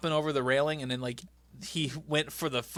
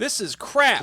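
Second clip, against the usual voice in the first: put-on scream, higher and louder; 9 semitones higher, 8 dB louder than usual. Retelling what a priest in the show yelled: imitating a priest screaming. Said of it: "Just screaming at everybody".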